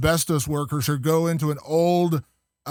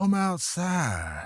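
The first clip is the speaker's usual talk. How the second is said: eerie, sinister, creepy preacher voice; 2 semitones higher, 5 dB quieter than usual. Retelling a horror movie scene where a preacher calls someone outside: imitating a creepy preacher. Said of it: "it real creepily, he goes".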